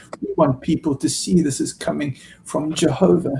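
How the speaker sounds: gentle, soft voice with beautiful tones. Speaker retells what a man told him about not being named, in mock soft tones. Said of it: "soft tones".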